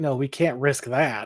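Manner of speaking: put-on sarcastic tone. Retelling a TV scene, quoting Marilyn: imitating Marilyn sounding sarcastic. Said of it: "sounds very sig-, sarcastic when she's like".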